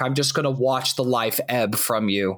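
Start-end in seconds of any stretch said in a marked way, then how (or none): none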